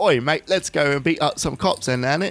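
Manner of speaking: bad put-on Cockney accent. Asked about London accents, mimicking the locals in a bad Cockney accent. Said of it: "I can't do a very good Cockney accent".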